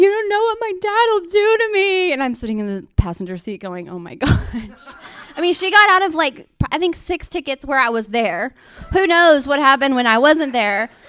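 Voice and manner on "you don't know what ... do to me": put-on, very high, tearful sobbing voice. Speaker retells her older sister getting pulled over; imitating someone crying. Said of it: "she would start crying".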